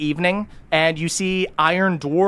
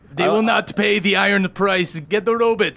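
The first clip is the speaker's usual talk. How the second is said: put-on fantasy dwarf voice with a Russian accent; 4 semitones higher than usual. Voicing a dwarf character for the group, in a Russian-accented dwarf voice. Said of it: "can I please use Russian accent dwarves?".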